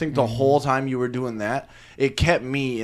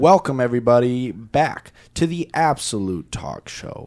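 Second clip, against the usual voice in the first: polished on-air radio announcer voice; 4 dB louder than usual. Asked to start, [name] gives the show's welcome line in his best radio voice. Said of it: "Can we all do our best radio voice".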